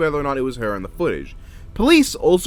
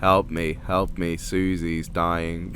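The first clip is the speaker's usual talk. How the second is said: very low, slow, flat, unchanging monotone; 10 semitones lower, 6 dB quieter than usual. Retelling a woman's phone call for help: flat monotone voice. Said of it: "in a monotone voice. Monotone".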